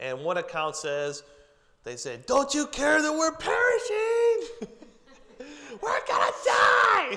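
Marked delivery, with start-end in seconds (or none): 2.3-7.2 mock very high, loud, frantic, panicked wail. Retelling the disciples waking Jesus in the storm: acting out panicked disciples. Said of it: "freaking out".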